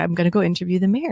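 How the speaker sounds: normal talking voice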